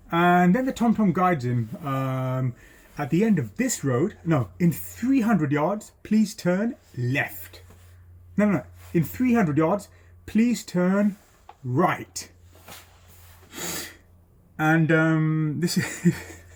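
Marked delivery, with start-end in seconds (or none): 2.9-12.2 level, neutral female sat-nav announcer voice. Retelling a driving test as the sat nav guides: neutral female TomTom voice. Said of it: "in that TomTom female".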